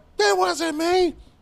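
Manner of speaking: high, loud screaming.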